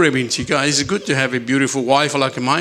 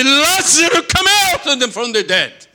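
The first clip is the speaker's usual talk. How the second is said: calling out loud in a great, pitched-up voice; 12 semitones higher, 4 dB louder than usual. Retelling Jesus calling Lazarus out from the dead: great loud voice. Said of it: "with a great voice".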